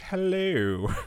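fake British accent. Reading a listener's letter aloud, saying hello: put-on british accent. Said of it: "That's your British hello?".

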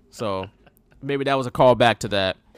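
ordinary talk

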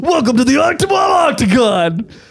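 high, bellowing, shouted cage fight announcer voice.

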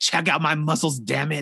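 put-on foul-mouthed cussing rant. Retelling a costumed character cussing up a storm at the competition. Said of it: "this Otev was cussing up a storm".

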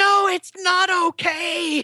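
very high, full-lunged, distressed shout. Recounting her reply after being told it's okay, retelling a shout at full voice. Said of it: "she shouted at the top of her lungs".

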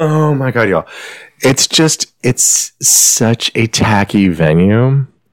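words broken up by bursts of laughter. Describing a scene at a tacky venue to listeners, laughing while talking. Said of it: "I'm sorry, I'm laughing".

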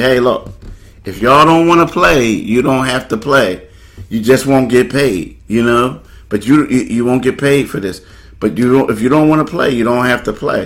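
ordinary talk, nothing marked

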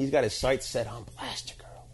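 unvoiced whisper.

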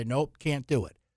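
ordinary talk

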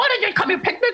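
very high-pitched, angry scolding tone. Retelling Judge Judy scolding an unprepared woman: imitating Judge Judy angry. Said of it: "she was, like, mad".

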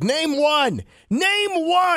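mock yelling, very slow and very high-pitched. Retelling a speech Biden gave last week, mimicking Biden yelling. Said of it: "And he's like yelling".

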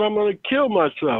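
mock screaming, high-pitched outburst. Retelling a breakdown in front of a counter clerk: retelling own screaming. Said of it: "I started screaming out".

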